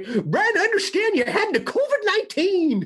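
put-on high-pitched old prospector voice. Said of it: "if we started the podcast over and just did it that way".

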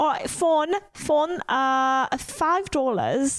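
put-on British accent. Speaker reading out the next one, as asked, in a british accent. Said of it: "Next one with the British accent".

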